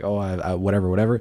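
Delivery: ordinary delivery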